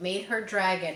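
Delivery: ordinary delivery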